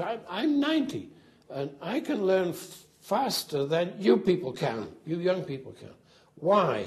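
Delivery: squeaky, animated, swooping, high sing-song voice. Recalling Bertrand Russell talking to a group of young kids: squeaky Bertrand Russell voice. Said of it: "He got a very squeaky voice".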